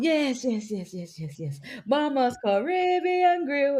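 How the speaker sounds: very slow commercial radio announcer voice. Retelling a radio commercial, imitating a radio ad announcer. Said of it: "The man used to be going".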